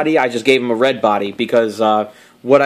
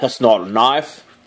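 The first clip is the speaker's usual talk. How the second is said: bad put-on Australian accent. Quoting a movie line about a toy's sword: bad Crocodile Dundee impression. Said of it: "my Australian accent is the same as my, um, English accent. It's just awful".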